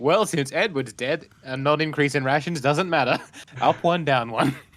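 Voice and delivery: sardonic, sneering, sarcastic tone. Speaking out of character about the dead Edward's rations: sarcastic. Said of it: "This is me being sarcastic".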